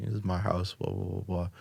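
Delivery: ordinary talk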